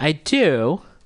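voice suddenly shooting way up in pitch. Asked by the host whether they know how to swim, voice jumping way up. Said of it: "Why did your voice do that?".

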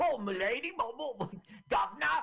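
exaggerated Cockney accent. Describing how an ugly puppet sounds, speaker mimics him: exaggerated cockney accent. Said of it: "it's so Cockney".

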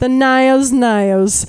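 bad put-on Australian accent, drawn-out Nios. Quoting a rep from Australia saying "Nios": awful Australian accent. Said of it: "that's my awful Australian accent".

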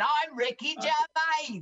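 fake London Cockney accent. Retelling a stand-up bit done as Ricky Gervais: Ricky Gervais impression, Cockney accent. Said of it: "put on a cocky acc-, Cockney accent and said".

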